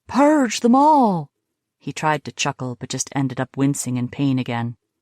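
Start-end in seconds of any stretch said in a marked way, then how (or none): 0.1-1.3 shrill, very high, raised put-on voice. Teasing a friend, a character puts on a high-pitched voice. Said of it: "put on a high-pitched voice".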